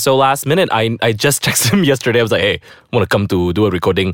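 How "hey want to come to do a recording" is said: put-on Malaysian-accented speech. Retelling what she texted the guest, in a Malaysian accent. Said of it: "I did with my Malaysian accent".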